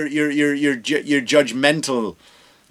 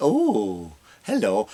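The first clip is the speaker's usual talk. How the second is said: exaggerated, over-the-top flamboyant camp voice; 5 semitones lower, 5 dB quieter than usual. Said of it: "That's my impression of an over the top flamboyant".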